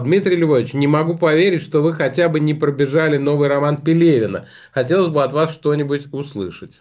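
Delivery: ordinary delivery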